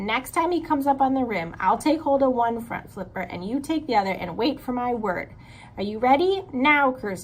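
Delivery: ordinary delivery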